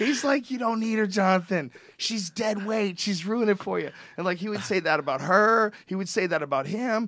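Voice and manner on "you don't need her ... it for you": hostile, taunting yell. Retell the heckling of Jonathan about his wife, imitating Johnny Fairplay yelling. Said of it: "Johnny Fairplay is yelling at the guy".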